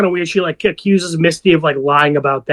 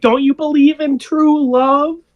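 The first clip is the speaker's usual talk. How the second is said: put-on wailing cry, very high; 11 semitones higher than usual. Retelling a scene where Natalie hangs up the phone: imitating Natalie wailing. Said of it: "wailing, like".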